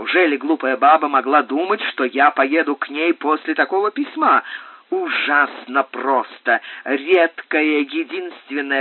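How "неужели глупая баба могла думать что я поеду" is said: ordinary delivery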